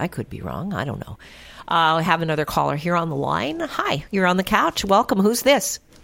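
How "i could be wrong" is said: quiet, low delivery. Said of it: "That's what I always say".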